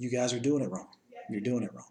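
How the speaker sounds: put-on mild, insistent yell. Retelling what a man on his phone yelled at them: imitating a man yelling. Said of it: "he was yelling".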